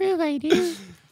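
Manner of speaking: very high-pitched put-on character voice. Asked by a co-host to do a voice after saying Grogu approves, Grogu voice. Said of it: "Are you going to try and do a voice?".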